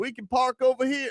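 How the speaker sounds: very high, slow, put-on Indiana country accent. Imitating Indiana fans tricked into parking at the Walmart: put-on country accent imitating Indiana fans. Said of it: "I don't know what the sound like in Indiana".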